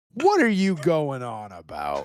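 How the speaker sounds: swooping, emphatic catchphrase-style delivery. Imagining a friend as a TV mailman with his catchphrase: imitating Kurt. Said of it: "and he'd go".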